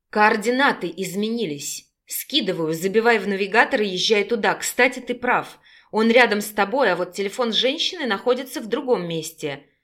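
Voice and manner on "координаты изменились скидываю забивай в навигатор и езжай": usual speaking voice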